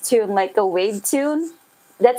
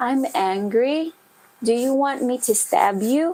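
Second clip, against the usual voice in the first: soft, gentle, mild, even-toned delivery; 3 dB quieter than usual. Imitating how some people say angry words without shouting, soft, gentle tune. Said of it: "they would say it like this".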